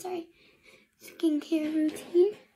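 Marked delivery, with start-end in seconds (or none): 1.0-2.3 "skincare routine" spelled out slowly and distinctly. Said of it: "Like, skincare routine, not skin routine".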